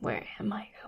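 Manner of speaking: soft, secretive, conspiratorial whisper.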